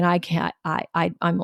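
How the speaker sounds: put-on crying. Recalling calling the listener after the kids' nap, imitating own crying. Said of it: "and I and I'm crying, and I was saying".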